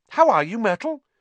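forced, falsely bright, very high sunny voice. Narrator reads a character's greeting to someone sulking nearby: falsely bright voice. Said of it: "said Hermione in a falsely bright voice".

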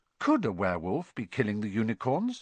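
ordinary delivery, nothing marked

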